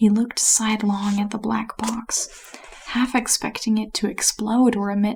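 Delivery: ordinary delivery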